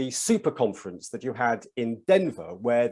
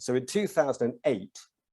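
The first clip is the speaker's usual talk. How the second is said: ordinary talk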